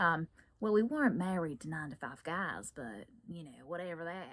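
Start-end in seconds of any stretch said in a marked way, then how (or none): 0.7-2.7 put-on Southern US accent slipped into. Showing how switching accents changes what you say, southern accent. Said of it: "right now I just went into the southern accent".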